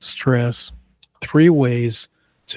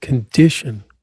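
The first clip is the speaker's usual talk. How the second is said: condition with stress on its second syllable. Teaching word stress in a pronunciation exercise, condition, stress on second syllable. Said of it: "Stress on the second syllable".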